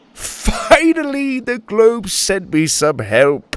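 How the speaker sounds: spoken through a laugh. Reading a story, a man answers a girl and her grandpa: laughing. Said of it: "The mustached man laughed".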